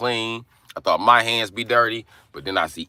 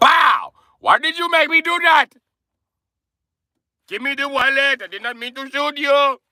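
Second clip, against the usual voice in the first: very high, apologetic, put-on Indian accent; 4 dB louder than usual. Speaker acts out what the robber would say after shooting you, imitating the indian guy. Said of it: "he's probably gonna be like".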